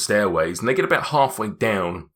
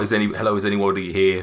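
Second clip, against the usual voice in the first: normal talking voice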